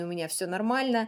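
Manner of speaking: ordinary delivery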